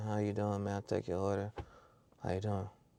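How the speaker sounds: quiet nonchalant mumble. Retelling a worker taking the speaker's order at the speaker box, imitating a nonchalant voice. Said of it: "It's the same nonchalant voice".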